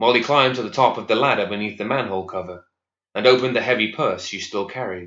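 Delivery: ordinary delivery, nothing marked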